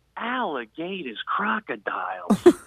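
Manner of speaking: quiet, hushed whisper under the breath. Retelling what was said once a man walked away, whispered to the speaker's wife: retelling a whisper. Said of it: "I whispered to my wife".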